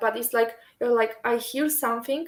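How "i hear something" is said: ordinary talk, nothing marked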